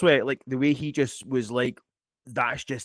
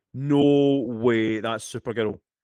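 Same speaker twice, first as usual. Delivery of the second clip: usual speaking voice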